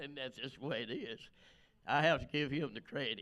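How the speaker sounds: crying, tearful, choked up, high and rushed. Telling how Janice started crying, the speaker is moved too: crying while speaking. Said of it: "Now you see, I'm crying".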